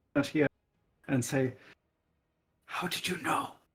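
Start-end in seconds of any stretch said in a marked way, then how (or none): 2.7-3.5 hushed whisper in character, quieter. Voicing a character who asks another in secret: whispering in character. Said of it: "he's going to try to whisper it".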